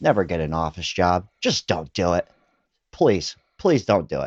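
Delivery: acted, pleading, motherly voice. Retelling mom's morning advice against office jobs: imitating mom pleading. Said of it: "My mom would go".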